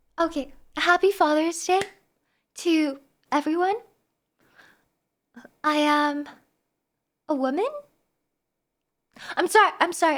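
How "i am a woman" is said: uncertain, slow, rising like a question. Answering a chat joke about Father's Day: uncertain questioning tone. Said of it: "I didn't mean to say it with such uncertainty".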